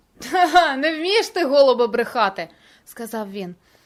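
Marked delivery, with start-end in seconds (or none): 0.3-2.5 loud, scornful, jeering laugh. Dodir answers the narrator's unconvincing reply with a mocking laugh. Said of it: "глузливо зареготав".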